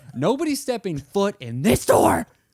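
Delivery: put-on yelling. Retelling a phone call refusing entry to the apartment: imitating own yelling.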